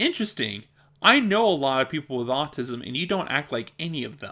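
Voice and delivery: ordinary talk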